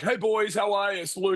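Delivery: exaggerated Australian accent. Retelling greeting two guys jumping rope in a back room: exaggerated Australian accent. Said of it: "I really drummed up the Australian accent".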